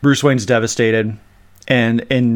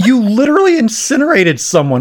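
high-pitched voice cracking with uncontained emotion; 11 semitones higher, 4 dB louder than usual. Ranting about a tv character who incinerated someone, voice cracking. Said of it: "My voice is cracking".

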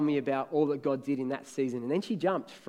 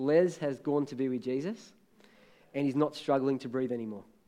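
usual speaking voice

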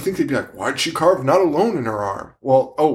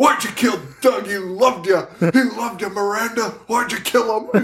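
high, drawn-out, completely unhinged voice; 8 semitones higher than usual. Retelling the sheriff's interrogation of miranda: imitating the sheriff losing it. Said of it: "loses his mind".

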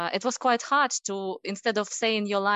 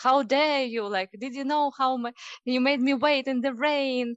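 put-on over-the-top, thickly laid-on Russian accent; 4 semitones higher than usual. A speaker retells a repetition practice session, in an exaggerated Russian accent. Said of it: "With an exaggerated Russian accent".

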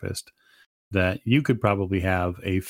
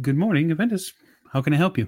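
crisp, high-pitched feminine voice; 9 semitones higher than usual. Voicing the person who answers an office phone: crisp feminine voice. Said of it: "you hear a crisp, feminine voice".

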